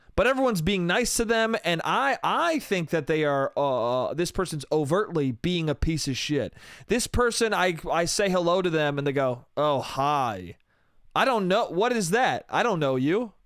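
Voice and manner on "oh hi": mock condescending tone, lower. Retelling how someone in a friend group greeted back: imitating a condescending hello. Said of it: "You're gonna give me a condescending hello".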